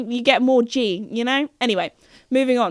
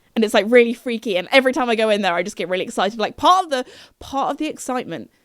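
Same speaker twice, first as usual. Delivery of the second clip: ordinary talk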